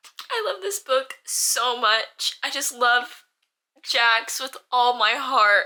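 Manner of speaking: slow, tearful gushing, crying through every word. Talking about a book she is still reading, crying while talking. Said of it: "I'm literally crying".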